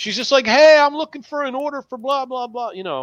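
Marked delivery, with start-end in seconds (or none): 0.5-2.7 mock friendly, loud, high calling out. Retelling a stranger walking up to the table, imitating her shouting, not angry. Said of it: "she starts shouting, not angry".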